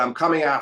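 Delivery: plain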